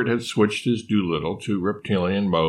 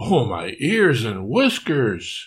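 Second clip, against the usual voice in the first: with a gasp; 2 semitones higher than usual. Marmalade reacts to hearing a dinosaur's size, gasping. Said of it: "gasped Marmalade".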